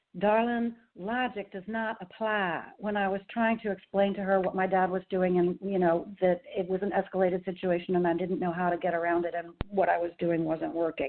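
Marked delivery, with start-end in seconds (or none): 0.2-2.7 beautiful, slow southern drawl. Speaker recalls what their mother once told them: mother's Southern accent. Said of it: "in her beautiful Southern accent".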